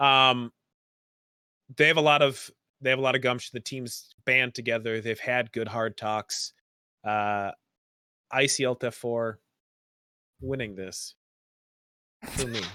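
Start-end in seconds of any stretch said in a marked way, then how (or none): 8.3-12.6 very slow, drawn out, halting, breaking mid-phrase. Speaker names a team winning it for them, said really slowly. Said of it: "You said that really slowly".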